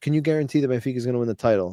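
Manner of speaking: ordinary talk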